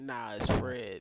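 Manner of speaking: deepest possible, very low voice. Retelling how Dom's cousin corrected his name: imitating Fred's deep voice. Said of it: "he said it in the most, like, deep".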